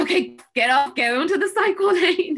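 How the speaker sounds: high, loud, panicked yelling.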